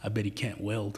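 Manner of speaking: hushed, muttered under the breath, quiet. Retelling a buddy's remark while listening in the kitchen: imitating muttering under breath. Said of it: "he says under his breath".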